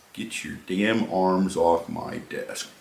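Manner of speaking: very low, hushed, barely a murmur. Retelling how a gunnery sergeant leaned in to speak to him, in a very low voice. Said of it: "in a very low voice that no one else could hear".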